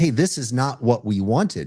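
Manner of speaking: ordinary talk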